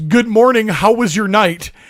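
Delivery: halting, choppy, broken non-native English. Retelling a man's wife greeting the guests in the morning, imitating broken english. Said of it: "In the most broken English".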